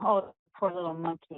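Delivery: ordinary delivery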